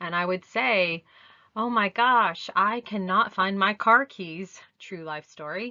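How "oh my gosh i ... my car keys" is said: put-on flustered, upset exclamation. Showing how to model feelings for children: acting upset. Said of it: "I would fake being upset".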